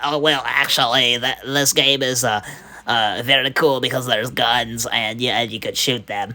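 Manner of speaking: stumbling, hesitant, um-filled nerdy character voice. Speaker demonstrating the character voices they can do, nerd character voice. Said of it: "that's kind of like the nerd voice".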